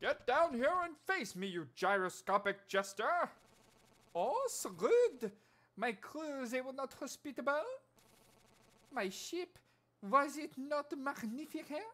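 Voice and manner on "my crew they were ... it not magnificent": fake, bad French accent, higher pitch. Playing a game, voicing a character in a bad French accent. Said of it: "I don't know how to do the French accent".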